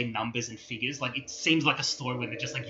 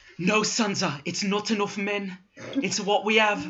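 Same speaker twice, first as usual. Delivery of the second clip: put-on Irish accent, higher-pitched; 8 semitones higher, 3 dB louder than usual. Acting out what he seems to say, in a put-on Irish accent. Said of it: "That sounded more Irish".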